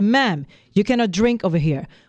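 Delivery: mock snippy, attitude-filled scolding tone. Recounting someone in church who turned around to scold them, imitating someone with attitude. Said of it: "you have the nerve to turn around with an attitude and say".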